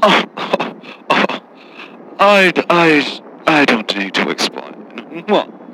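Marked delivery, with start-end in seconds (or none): 3.5-5.2 low, snooty put-down. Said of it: "You sound very snooty".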